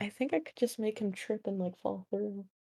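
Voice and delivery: hushed, very quiet half-whispered stage whisper. Speaking aside to one other person, half-whispering. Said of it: "I'm gonna whisper".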